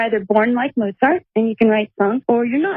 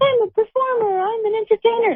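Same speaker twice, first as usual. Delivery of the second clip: put-on very high small child's voice; 12 semitones higher than usual. Recalling telling the grown-ups what they'd be when grown up, in a little kid voice. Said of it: "That's my little kid voice".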